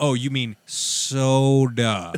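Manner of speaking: loud, slow, condescending, with "soda" drawn way out. Retelling a hotel candy shop worker correcting you, mimic his slow condescending tone. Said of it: "And he said it all slow".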